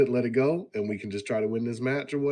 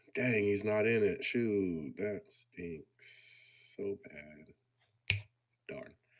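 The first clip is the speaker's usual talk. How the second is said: dripping sarcasm with put-on dismay and disappointment; 3 semitones lower, 8 dB quieter than usual. Reacting to hearing a rival is not in the match: sarcastic fake disappointment. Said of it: "That's sarcasm".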